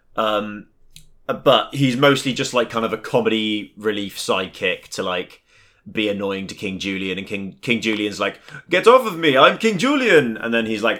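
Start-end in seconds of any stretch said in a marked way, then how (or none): 8.7-10.4 loud, swooping, put-on cartoon accent. Doing a playful impression of an animated king irritably brushing off an annoying sidekick, in a cartoon lemur king accent. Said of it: "It's a pretty good impression for me".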